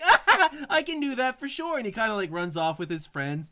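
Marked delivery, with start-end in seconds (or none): 0.0-1.8 put-on cheerful child voice, very high and loud. Voicing a kid in the town, happy kid voice. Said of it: "the kid's like all happy".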